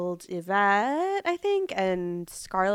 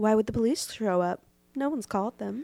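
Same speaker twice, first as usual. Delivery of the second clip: sharp, sassy, bitchy acted-out delivery. Retelling a movie character's line with the sassy delivery: imitating a sassy line delivery. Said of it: "he kind of cuntily delivers".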